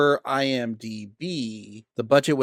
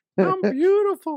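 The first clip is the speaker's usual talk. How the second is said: put-on alien character voice, higher and louder; 4 dB louder than usual. Quoting a line after praising an actor's iconic voice: Kevin McDonald voice. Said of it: "that voice".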